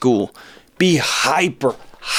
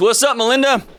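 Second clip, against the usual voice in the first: high, yelling radio host style call-out; 10 semitones higher than usual. Greeting a caller on the phone: yelling. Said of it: "I don't know why I'm yelling".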